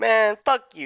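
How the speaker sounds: petty bickering. Voicing two characters arguing with each other at a meal: bickering. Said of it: "bickering towards each other".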